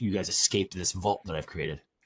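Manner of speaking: ordinary talk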